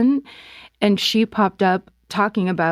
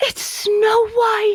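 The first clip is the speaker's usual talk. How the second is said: mock, very high, gasped exclamation of joy. Retelling a coworker's greeting in the hall: imitating a gasping delighted exclamation.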